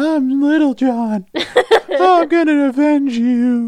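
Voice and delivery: very high, slow, unconvincing put-on baby talk. Mimicking a character's voice actor trying to talk like a baby. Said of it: "the character's voice actor like trying to talk like a baby".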